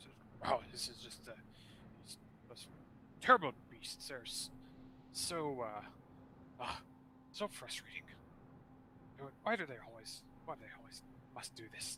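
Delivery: whispered, breathy grumbling under the breath. A narrator voices a figure echoing from atop a building, muttering. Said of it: "kind of muttering now more".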